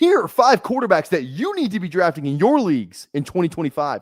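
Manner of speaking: hype narrator voice. Showing how short fantasy-football video intros are done, in the TikTok voice. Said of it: "the TikTok voice".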